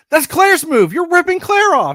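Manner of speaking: very high, shrill, loud, furious, indignant scream. Retelling watching a movie sequel: imitating own screaming. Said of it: "I kept screaming".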